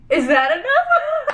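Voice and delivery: high, slow, laughing with mock worry.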